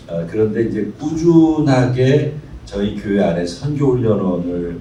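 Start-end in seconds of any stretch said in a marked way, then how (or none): none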